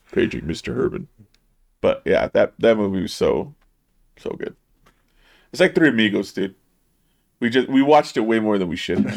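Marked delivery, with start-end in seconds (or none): 0.2-1.1 oddly deep, announcer-style put-on voice, quieter. Recalling a movie line he used to throw out, in an oddly deep put-on voice. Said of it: "when he did that voice".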